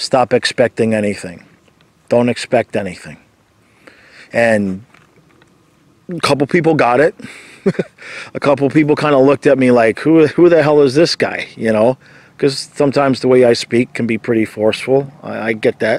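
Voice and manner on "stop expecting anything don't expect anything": put-on deadpan delivery. Speaker retells answering people who asked for their best advice: retelling a deadpan reply. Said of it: "I just looked at them deadpan and I just said".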